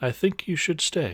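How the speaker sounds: quick, high-pitched inner voice. A player speaks telepathically into another character's head, telepathic inside voice. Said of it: "my inside voice".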